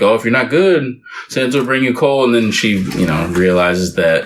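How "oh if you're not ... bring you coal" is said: ordinary talk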